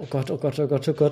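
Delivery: acted nervous fretting. Describing a contestant waiting for the judges' verdict; mock-anxious fretting. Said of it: "ist er total am Bangen".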